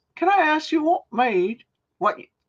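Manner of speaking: high, bad British accent.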